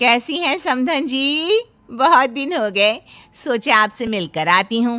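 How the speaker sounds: ordinary delivery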